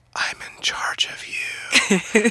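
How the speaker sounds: soft, hushed whisper. Retelling what one child whispered to another, whispering. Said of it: "covers her mouth and whispers to Rad".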